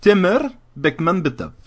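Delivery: put-on Indian accent. Pronouncing the director's name: put-on Indian accent. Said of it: "je l'ai dit avec un accent indien".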